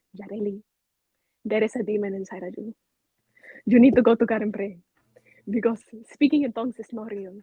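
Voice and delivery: put-on broken English, Spanish accent. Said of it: "in her broken English looks at me and goes".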